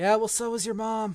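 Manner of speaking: loud, booming voice thundering down from above. A player curses at the sky and a voice answers from above; voice booming from the sky. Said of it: "You hear this voice boom out from the sky".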